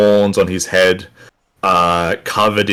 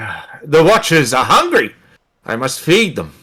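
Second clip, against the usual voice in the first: put-on old satyr character voice, higher; 6 semitones higher than usual. Voicing an elderly satyr dragging a body, asked to stop: elderly satyr voice. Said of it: "and he goes".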